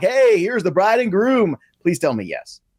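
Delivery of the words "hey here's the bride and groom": high, hyped-up club DJ announcer voice. Joking about a wedding DJ: imitating a hype DJ announcer voice. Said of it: "is he gonna talk like this like all D Js talk".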